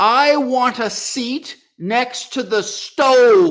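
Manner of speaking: oblivious, very loud, very high, slow, drawn out. Retelling what an elderly father said on a streetcar: imitating someone speaking loudly. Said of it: "he says loudly".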